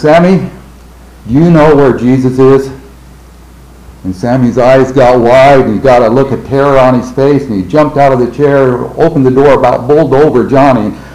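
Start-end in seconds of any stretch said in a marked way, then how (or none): 0.0-2.7 acted-out commanding, grave, stern authoritative voice. Retelling how he asked sammy a question, in his most authoritative voice. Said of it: "in his most authoritative voice".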